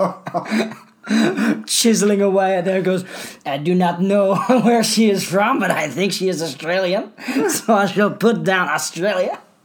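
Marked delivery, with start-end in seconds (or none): 3.4-9.4 clumsy, bad, fake put-on French accent. Picturing a Frenchman in a smoke-filled office, the speaker voices him in a bad French accent. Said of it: "Please don't do that accent ever again".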